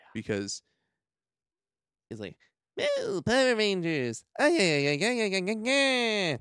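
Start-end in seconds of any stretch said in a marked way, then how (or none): 2.7-6.3 very high, swooping, squeaky, sing-song robot voice, drawn-out ay. Complaining about a scene in the show, the speaker does an annoying Alpha voice. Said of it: "I don't even know if I can make my voice that annoying".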